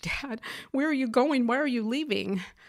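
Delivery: put-on desperate, panicked, frantic, high begging. Retelling calling to Dad on the front porch as the car was packed, frantic plea. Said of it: "I said frantically".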